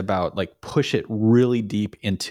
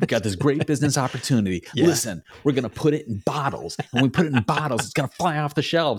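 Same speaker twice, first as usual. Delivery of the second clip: manic, rapid-fire, way-too-fast talk; 4 semitones higher than usual. Describing a scene where Archer pitches a business opportunity, in a fast manic Archer impression. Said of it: "He is talking way too fast".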